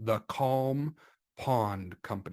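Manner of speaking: unhurried, slow, deliberate, drawn-out delivery. Speaker presents the name of a fictitious company for a brand; said slowly. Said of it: "You have to say it slow".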